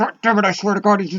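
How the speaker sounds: angry words through clenched teeth. Showing how you react when frustrated, talking through your teeth. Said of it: "I'll even talk through my teeth".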